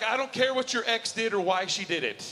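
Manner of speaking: ordinary talk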